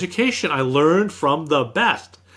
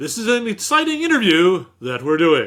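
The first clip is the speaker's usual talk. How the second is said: imitated on-camera announcer voice; 2 semitones higher than usual. Speaker imitates their dad, who always talked like he was on camera. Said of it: "talked to you like he was on camera".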